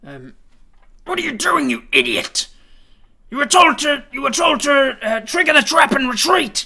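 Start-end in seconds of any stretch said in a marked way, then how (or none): 1.0-6.7 furious yell, very loud and high pitched. A game master voices someone shouting from the distance at the boar, shouting. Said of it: "you hear uh, a, a voice shout".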